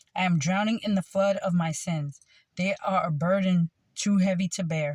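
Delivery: normal talking voice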